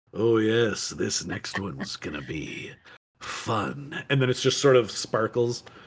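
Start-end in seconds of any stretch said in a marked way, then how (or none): 0.2-4.1 very slow, sinister, hushed, drawn-out villain whisper. Teasing the other person about how they said something, performing it in a villain voice. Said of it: "You kind of said that like a villain".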